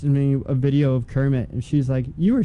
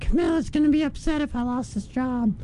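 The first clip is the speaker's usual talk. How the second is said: very high, goofy, silly puppet-style voice; 12 semitones higher, 3 dB quieter than usual. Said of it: "You sound like, Gonzo doing an impression".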